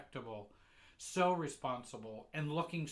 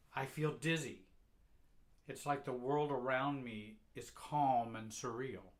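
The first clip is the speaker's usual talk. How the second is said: normal talking voice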